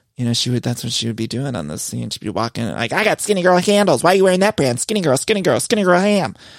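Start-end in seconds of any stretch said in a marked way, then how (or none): 3.0-6.4 mock, loud yelling tirade, over and over. Imitating Bethany yelling at Whitney about her clothes: Bethany impression, yelling. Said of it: "she'd be yelling at Whitney".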